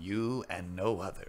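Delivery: measured, low, deliberate game-trailer announcer voice. Showing the others an impression of the man with the glasses. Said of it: "sound just like this man with the glasses".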